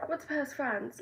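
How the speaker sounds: put-on British accent. Talking about a past trip to paris, put-on british accent. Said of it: "I'm speaking in a British accent".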